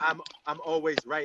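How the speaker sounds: normal talking voice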